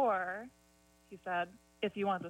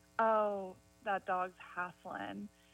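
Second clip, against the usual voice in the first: slow Eastern North Carolina Southern drawl. Speaker quotes something she used to say, in her southern accent. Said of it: "in her Southern accent".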